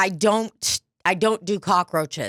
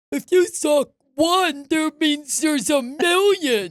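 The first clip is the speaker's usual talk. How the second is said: scornful, derisive, higher, acted-out mock voice; 8 semitones higher than usual. Retelling what people will say about one cockroach: mocking imitation of critics. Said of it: "everyone saying some dumbass shit like".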